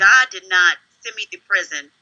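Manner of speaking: put-on tearful, crying voice. Retelling pleading with a records clerk while crying: retelling own crying plea. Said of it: "So I'm crying and tears and snot".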